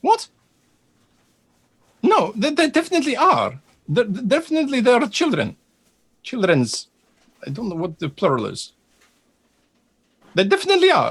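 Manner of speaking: jittery, nervous, very high-pitched stammer. Role-playing an argument with fellow characters, in a high-pitched nervous voice. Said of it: "Why is it so high pitched?".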